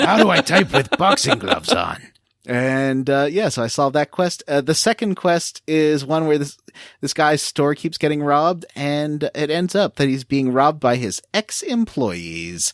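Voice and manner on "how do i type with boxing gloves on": high, pitched-up character voice with wide swooping swings. Showing how the game's male Argonians and cat men talk: Strong Bad voice. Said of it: "They both talk like this".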